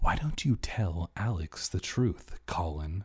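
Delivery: low stage whisper. An aunt speaks to the uncle during a car ride, whispering. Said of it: "She lowered her voice to a whisper".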